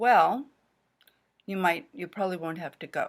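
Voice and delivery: clear, brief pause after well. Lesson on interrupters, showing a pause after well at the start. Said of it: "do you hear that we pause around it?".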